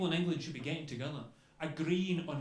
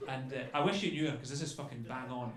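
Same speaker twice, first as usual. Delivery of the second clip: usual speaking voice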